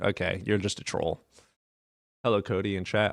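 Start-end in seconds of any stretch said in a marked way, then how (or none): 0.0-1.2 put-on chuckling voice, lower and quieter. Retelling what someone said while arguing, imitating someone chuckling. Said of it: "he starts chuckling".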